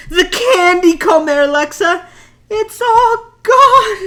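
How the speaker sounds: dramatic, high, slow, drawn-out wail.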